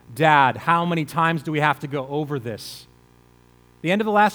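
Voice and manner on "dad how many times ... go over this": dripping with sarcasm. Retelling a son's reply to his father: imitating a sarcastic reply. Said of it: "you can almost hear the sarcasm in his voice".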